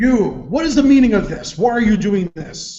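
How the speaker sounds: very loud, high, intimidating screaming shout. Intimidating enemies in the game, charging in with a hammer: screaming at them. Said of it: "I'm gonna scream out at them".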